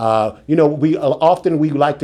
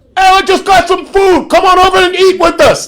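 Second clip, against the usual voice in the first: very loud, high, big booming voice; 8 dB louder than usual. Retelling how Dikembe got out of his car at three in the morning, in Dikembe's big booming voice. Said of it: "Big booming voice".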